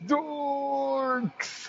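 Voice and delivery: high mock cartoon yell, "dorks" pitched high. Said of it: "the way that Kevin from Ed, Edd n Eddy screams it".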